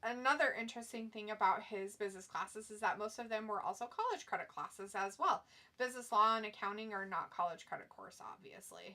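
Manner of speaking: plain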